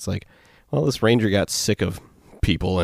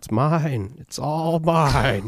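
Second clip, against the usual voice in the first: put-on scream, higher; 7 semitones higher than usual. Retelling a sighting of a headless rider: imitating a scream. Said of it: "just screaming".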